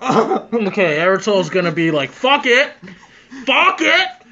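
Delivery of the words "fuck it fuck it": very high-pitched, booming bellowing shout. Voicing Eritol as his voice suddenly booms: booming loud voice. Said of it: "this voice just booms".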